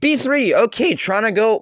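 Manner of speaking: voice cracking. Commentating a chess game against an opponent, voice cracking. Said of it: "That was a voice crack".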